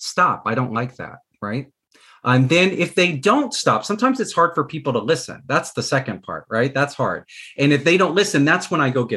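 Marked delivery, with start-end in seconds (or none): 0.0-1.2 firm, steady words in a nice tone. Showing how to tell someone to stop: firm, not yelling. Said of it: "we can be firm and we can say".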